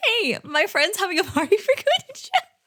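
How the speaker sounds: high mocking voice.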